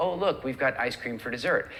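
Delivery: normal talking voice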